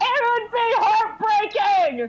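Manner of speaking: high, drawn-out heckling yell. Voicing someone in a crowd at the contest: yelling from the crowd. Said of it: "You hear someone yell from the crowd".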